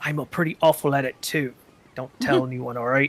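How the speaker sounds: half-voiced, hushed stage whisper under the breath. Voicing a character who crouches down close to the listener, the speaker is half-whispering. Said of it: "he'll kind of whisper".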